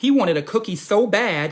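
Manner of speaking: ordinary delivery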